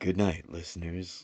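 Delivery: smooth, put-on radio announcer voice. Joking that everybody signs off in a put-on radio voice. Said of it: "Everybody puts on their radio voice and they're like".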